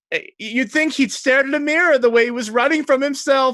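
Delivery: very high, loud, cackling mocking laugh. Retelling what a laughing group said while trading jokes: imitating laughing mockery. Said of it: "they're all laughing, and they're like".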